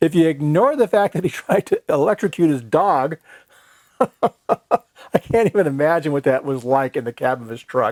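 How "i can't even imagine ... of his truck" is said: speech breaking up into laughs, talking through laughter. Thanking a helpful guy, then recalling a story about him: laughing while talking. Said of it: "I'm laughing".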